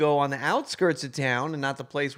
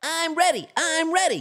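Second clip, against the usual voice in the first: very high, very slow, stretched cartoon voice. Practising an impression still a little off: SpongeBob voice. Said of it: "I used to do the SpongeBob impression".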